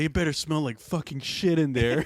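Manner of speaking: acted, put-on super jealous voice. Joining a joke about a partner in the bathroom: imitating a super jealous boyfriend. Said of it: "super jealous boyfriend".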